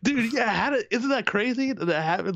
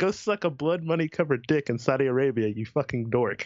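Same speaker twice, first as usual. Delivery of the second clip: ordinary delivery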